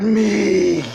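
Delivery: monstrous demon voice. Voicing a possessed character as something bursts out: demon voice. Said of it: "this demon voice just comes out of him".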